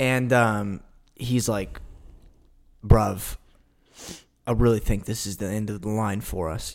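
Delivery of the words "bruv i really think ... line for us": put-on odd not-quite-British accent. Acting out an imagined scene, quoting him: Tate's not-quite-British accent. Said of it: "You know how he talks. Like, it's, like, British, but it's not British".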